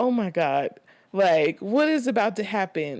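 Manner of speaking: frightened, panicking, scared voice. Retelling strangers coming out of the bushes: imitating own scared voice. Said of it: "I'm scared".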